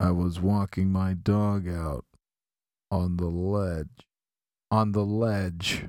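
mock bone-dry deadpan, low and flat. Speaker quotes a favorite comedian's one-liner, imitating a deadpan delivery. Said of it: "he has very, like, deadpan humor. He sounds like".

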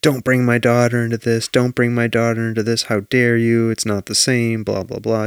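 usual speaking voice

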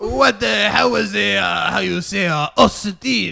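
imitated French accent. Imitating the French impostor at a family reunion: imitating a French accent. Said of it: "This guy has a French accent".

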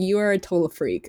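normal talking voice

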